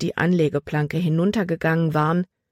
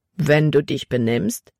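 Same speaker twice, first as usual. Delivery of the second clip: usual speaking voice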